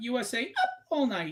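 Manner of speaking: slow, drawn-out TV show host announcer delivery. Recalling a late-night TV show to a co-host, Rhonda Shear impression. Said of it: "That's how she said it".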